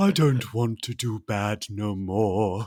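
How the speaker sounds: slow, drawling, clumsy put-on working-class accent. Doing a Boris Karloff impression in his bad working class accent. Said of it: "Boris Karloff".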